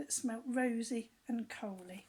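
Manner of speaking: ordinary delivery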